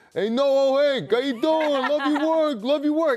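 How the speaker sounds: put-on New York accent. Quoting a man leaning out a window greeting him, in a thick new york accent. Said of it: "in like such a thick accent".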